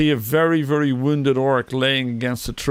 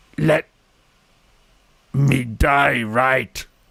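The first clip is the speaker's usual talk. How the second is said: grunting orc voice. Storyteller voices an orc struggling to raise his sword, grunting in Elvish. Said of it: "and he grunts in Elvish".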